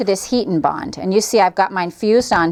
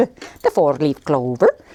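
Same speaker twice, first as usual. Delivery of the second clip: terrible, bad fake Irish accent; 6 semitones lower than usual. Explaining how to make a shamrock, slipping into a terrible put-on Irish accent. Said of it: "that was a terrible Irish".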